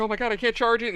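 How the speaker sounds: put-on panicked crying. Retelling a customer whose phone wasn't charging, imitating panicked crying. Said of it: "and she's panicking, crying".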